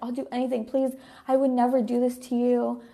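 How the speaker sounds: acted-out, mock-begging pleading voice. Retelling what he said while freaking out before flying to Dallas, retelling someone begging. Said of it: "He literally was like begging".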